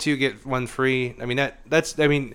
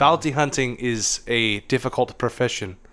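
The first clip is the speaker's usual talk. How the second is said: put-on elderly German man accent; 4 semitones lower, 7 dB quieter than usual. Impersonating a character, the speaker quotes his line on a difficult career in a put-on old German man voice. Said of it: "That's my go to German old man voice".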